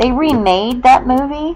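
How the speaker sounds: startled outburst. Chatting about old films, suddenly in shock: raised voice, shocked. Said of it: "Sorry to raise my voice".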